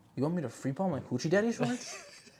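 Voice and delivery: put-on grave, earnest, dead-serious low voice. Retelling a friend's earlier words: imitating Fabian's mad serious low tone. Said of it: "mad serious, low tone".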